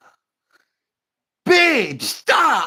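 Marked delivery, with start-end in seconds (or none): 1.4-2.7 much higher, loud exasperated plea. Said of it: "she was like".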